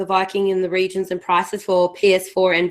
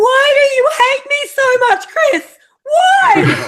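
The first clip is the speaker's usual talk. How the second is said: very high, loud, infuriated screaming; 7 dB louder than usual. Retelling playing a frustrating game: imitating screaming at the TV. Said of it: "I'm literally screaming at my T V".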